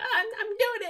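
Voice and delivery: put-on squeaky, pitched-way-up little child's voice. Redoing the kid character once voiced for the B-21 plane: kid voice. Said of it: "I did, like, a kid".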